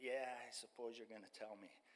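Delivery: mock mumble under breath. Retelling answering a man who held their arm: retelling a mumble. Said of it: "I mumbled something under my breath".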